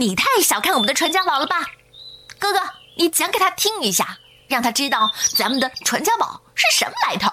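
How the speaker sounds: high, blurted outcry, unable to hold back. Reading the second brother objecting to an uncle's offer, crying out. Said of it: "老二忍不住叫起来".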